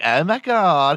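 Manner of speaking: put-on classic, high, gushing valley girl voice. Describing how Valley Girls used to talk, Valley Girl voice. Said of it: "And there were Valley Girls, and they're like".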